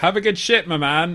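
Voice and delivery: high, loud shout. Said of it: "she just shouts out".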